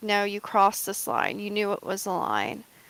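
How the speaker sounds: ordinary talk, nothing marked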